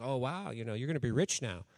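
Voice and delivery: teasing tone. Retelling teasing a friend about her new job, retelling a teasing remark. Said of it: "so I was teasing her about".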